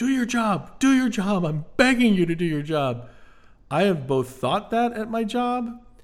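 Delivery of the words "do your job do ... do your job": mock yelling, pitched up. Quoting a movie character pleading with someone: imitating a character yelling. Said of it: "When he yells".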